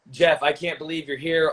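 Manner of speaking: ordinary talk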